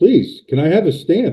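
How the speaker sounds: very high, begging, pleading delivery. Retelling begging an immigration officer for a stamp: imitating own begging. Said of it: "I was literally begging the immigration officer".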